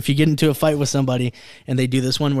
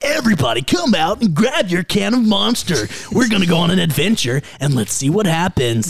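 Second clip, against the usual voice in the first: 90s ad announcer voice, much higher; 5 semitones higher than usual. Talking about ad voices, speaker shows their favorite: 90s commercial voice. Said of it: "the 90s voice was like".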